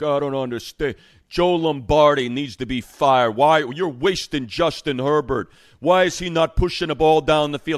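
put-on dumb New York accent. Mocking what an old friend said on a show, in George Reitster's stupid New York accent. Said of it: "he's got this stupid New York accent".

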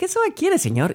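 put-on overly courteous, sweetly polite, very high voice. Retelling a cinema clerk's question: imitating a very friendly tone. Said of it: "con un tono muy amable".

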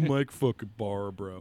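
put-on voice with laughter.

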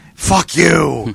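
put-on furious old man Italian bellow. Describing how the speaker's dad curses around the house, imitating angry Italian-accented bellowing. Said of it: "Like just an angry bellowing".

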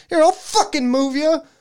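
furious, shrill, loud angry yell, very high. Retelling flipping the thing into the air, the speaker reenacts yelling at it. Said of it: "I'm yelling at this".

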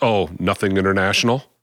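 ordinary talk, nothing marked

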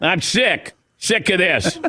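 put-on Boston accent. Acting out an angry Patriots fan in Boston: put-on Boston fan accent. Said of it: "I don't even know if that's the accent".

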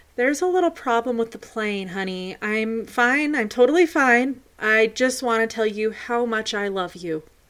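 ordinary delivery

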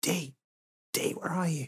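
high, hushed, half-whispered calling out. Voicing a character searching for a lost friend: half-whispering in character.

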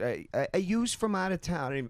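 put-on Philadelphia accent. Retelling what a woman at a dive bar up the street said, Philly accent. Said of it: "the Philly accent".

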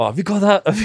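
put-on strong Welsh accent. Retelling a newlywed's request in the video van: imitating Caroline's Welsh accent. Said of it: "Very sort of Welsh accent".

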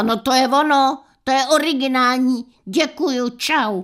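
sudden, loud, high-pitched shouted outburst. Retelling how Sagan reacted to her friend's plot suggestion, retelling Sagan's yell. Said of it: "načeně zařvala".

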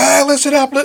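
put-on yelling. Retelling how he announced it in the middle of the arena: imitating someone yelling. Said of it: "just yelling".

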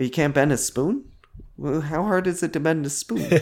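dripping sarcasm, sassy, mock disbelief. Imagining an actor cast as the Oracle, lines dripping with sarcasm: imagined sassy sarcastic Oracle. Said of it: "That would be the sassiest Oracle ever".

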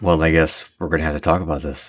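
dark, foreboding, menacing tone. A podcast host answers a co-host's suggestion of the Bachman stories, ominous delivery. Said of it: "Delivered so ominously".

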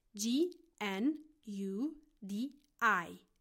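slow letter-by-letter spelling of gnudi.

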